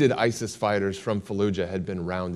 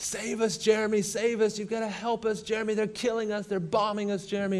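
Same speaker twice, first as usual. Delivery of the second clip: very high, desperate screaming cries; 13 semitones higher, 3 dB quieter than usual. Speaker recounts a phone call from one of his guys, retelling a screaming plea. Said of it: "one of my guys on the other end is screaming".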